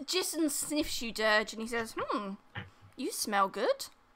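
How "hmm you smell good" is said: creepy, unsettling, skin-crawling, off-putting delivery. Voicing a character who sniffs another character: creepy.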